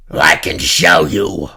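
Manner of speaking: rough, creaky, croaking slug beast voice. The slug thing speaks to Mattias, in a croaking slug creature voice. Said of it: "the slug thing croaked".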